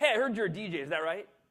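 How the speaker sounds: radio announcer voice. Retelling a call from the radio station in Oakhurst, do Larry Gamble's radio voice. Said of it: "he had one of those radio voices".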